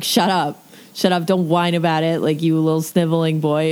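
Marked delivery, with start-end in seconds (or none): none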